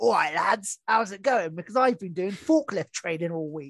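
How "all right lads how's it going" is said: put-on laddish bloke voice. Joking about a new voice after forklift training: put-on lad voice. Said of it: "my new voice should be".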